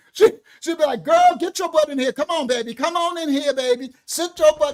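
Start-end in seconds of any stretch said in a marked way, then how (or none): 1.1-4.8 imitated rough grandmother voice, higher and louder. Imitating a grandmother calling a girl inside: imitating grandma's rough talk. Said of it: "my grandmother didn't talk soft".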